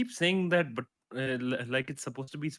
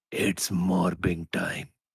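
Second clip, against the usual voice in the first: horror-movie style, very slow, deepened voice; 7 semitones lower, 5 dB louder than usual. Imagining flames flickering around them like a horror movie: deep, very slow voice. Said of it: "my voice like literally becomes like deeper, and I'm going to say very slowly".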